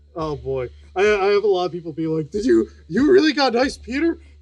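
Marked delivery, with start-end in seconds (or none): 2.3-4.2 mocking voice, much higher. Reading out what many chat viewers asked, in a mocking voice. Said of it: "that wasn't meant to be like a mocking voice".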